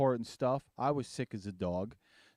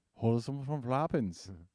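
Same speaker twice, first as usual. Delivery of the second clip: put-on German accent. Friends joke about voice-changing software, repeating a dad joke in a mock German accent. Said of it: "That's my German".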